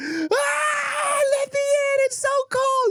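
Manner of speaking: mock sobbing wail, very high and very slow. Retelling how the speaker's brother begged to be let in, imitating him bawling. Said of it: "He's like bawling".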